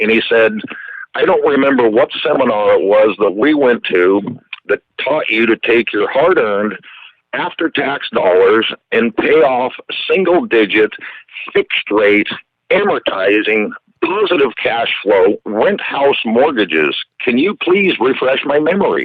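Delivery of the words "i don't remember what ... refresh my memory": ordinary talk, nothing marked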